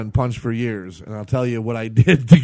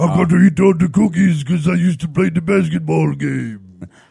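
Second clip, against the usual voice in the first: put-on drunken monster voice; 4 semitones higher than usual. Trading voice impressions, in a drunken Cookie Monster voice. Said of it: "It's more like a drunken cookie monster".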